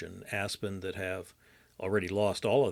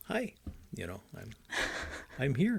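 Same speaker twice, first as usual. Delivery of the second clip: pitched-up public radio announcer voice; 6 semitones higher than usual. Teasing a co-host's on-air intro, the speaker does a public radio announcer voice. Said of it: "what it reminded me of was public radio".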